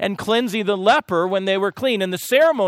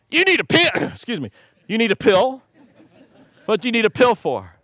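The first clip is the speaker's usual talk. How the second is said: swooping imitated Texas accent; 2 semitones higher than usual. A doctor retells answering a texan patient, imitating a texas accent. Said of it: "you start talking like that".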